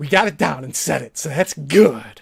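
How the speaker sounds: rough, loud, creaky put-on male voice. Show off that you are good at imitations of people, imitating him. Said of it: "I'm just imitating him".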